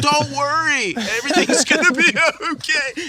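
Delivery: very high shout. Retelling filming in a downtown square: imitating own screaming at people. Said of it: "I'm screaming at people".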